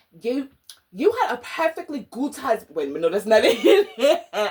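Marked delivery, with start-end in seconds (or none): 0.2-2.8 put-on British accent. Retelling a british drama scene, quoting a woman's line in a british accent. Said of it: "Let me do my accent".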